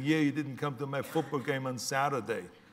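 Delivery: play-acted child's voice, sobbing and tearful. Retelling how the next kid cried at dinner: imitating a crying kid. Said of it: "the next kid started crying and saying".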